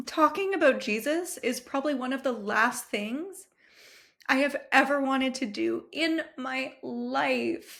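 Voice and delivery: heartfelt, reluctant, emotional tone, drawing out "life". Sharing about faith, the speaker is getting emotional. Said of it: "Wow, I'm getting emotional".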